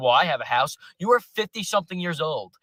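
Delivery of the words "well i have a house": mock smug tone, lower. Mocking what older generations say about owning houses: mimicking smugly. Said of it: "now you guys sit there and say".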